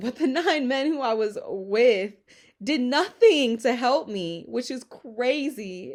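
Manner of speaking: voice rising with emotion. Speaker telling her own story, getting emotional. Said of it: "I'm getting emotional".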